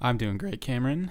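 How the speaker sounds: voice cracking. A co-host answers the other host's greeting, voice cracking. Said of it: "My voice just cracked".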